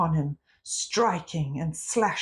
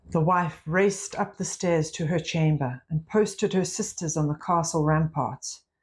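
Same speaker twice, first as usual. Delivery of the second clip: ordinary delivery, nothing marked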